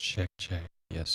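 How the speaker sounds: whispered very quietly. Testing a microphone by whispering into it, whispering. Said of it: "I'm whispering".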